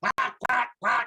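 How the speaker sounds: quacking sound like a duck.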